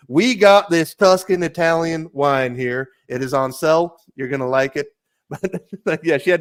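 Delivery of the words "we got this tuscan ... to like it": put-on full-on, overdone Utah accent, slow. Retelling selling wine to a customer from Ohio, in a full U-tonic accent. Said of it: "let me turn on my full U-tonic".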